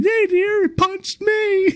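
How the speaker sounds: mock very high, blubbering, tearful crying voice. Retelling what a streamer said years later: imitating someone crying. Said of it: "she's crying like".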